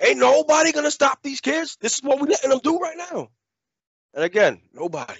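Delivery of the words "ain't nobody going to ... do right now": very high, snapped-temper shouting. Parent recounting yelling at kids chasing a deer: retelling a yell. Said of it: "And then I just lose my shit".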